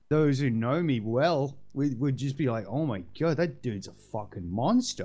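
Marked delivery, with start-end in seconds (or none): none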